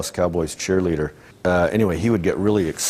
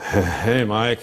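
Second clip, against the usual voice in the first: mock stoner voice with laughter; 3 semitones higher than usual. Recalling a stoned guy greeting him in the hallway, imitating a laughing stoner greeting. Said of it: "He just always had this laugh".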